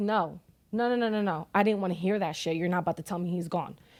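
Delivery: ordinary talk, nothing marked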